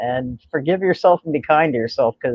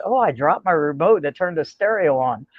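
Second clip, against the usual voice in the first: normal talking voice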